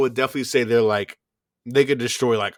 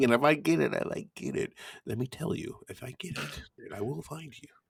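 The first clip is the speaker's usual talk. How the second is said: put-on menacing movie voice, higher and quieter; 4 semitones higher, 9 dB quieter than usual. Threatening another speaker over a spoiler: Liam Neeson Taken impression. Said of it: "but then it turned into, like, Liam Neeson from somewhere else".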